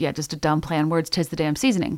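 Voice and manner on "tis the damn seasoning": ordinary delivery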